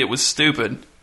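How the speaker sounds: ordinary delivery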